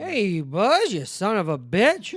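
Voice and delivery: very loud, bellowing, swooping cartoon-cowboy voice. Joking about sequels, the speaker does a Woody impression. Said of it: "That's my Woody impression".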